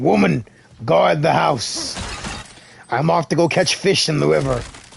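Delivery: rasping, rough, creaky voice. Repeating a line after praising the impersonation: Kratos impression. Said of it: "That was a good impersonation of Kratos".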